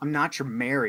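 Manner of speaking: mock-scornful delivery. Quoting a character's line while discussing how she delivers it, mock-scornful. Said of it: "there's scorn in her".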